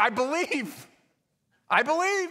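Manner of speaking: acted-out frantic, high, panicked yell. Telling a story of a man hanging from a branch, imitating him yelling back. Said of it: "yelled back".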